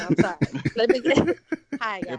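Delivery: words delivered through helpless laughter. Greeting two guests on a call, laughing while talking. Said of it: "I'm crying, laughing".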